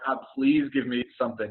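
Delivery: mock, imitated pleading tone. Recalling praying before deciding to serve, retelling a pleading prayer.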